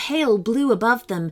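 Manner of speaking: plain reading voice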